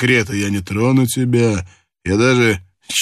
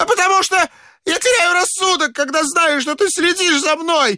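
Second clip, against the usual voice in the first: very high-pitched, shrill yell. A chancellor confronts a terrified old man, shouting. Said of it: "закричал канцлер".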